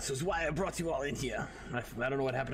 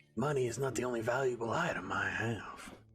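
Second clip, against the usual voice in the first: grimy-sounding gangster-style character voice. A character negotiates with others over his share, in grimy talk. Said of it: "[name] talks. / He's more of a grimy talk. / He's more of a grimy talk".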